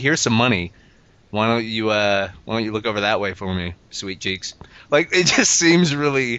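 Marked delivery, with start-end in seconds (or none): none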